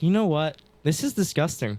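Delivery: ordinary delivery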